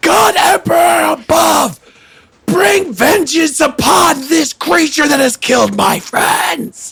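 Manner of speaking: very high, full-throated scream at top of lungs. Narrating a fight, the speaker voices a character screaming at the top of his lungs. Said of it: "Gore just screams at the top of his lungs".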